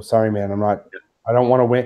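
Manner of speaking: ordinary talk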